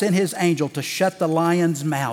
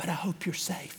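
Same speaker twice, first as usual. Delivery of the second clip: acted whisper, much quieter; 14 dB quieter than usual. Retelling the king whispering to Daniel after sealing the tomb, as a retold whisper. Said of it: "and then he's whispering".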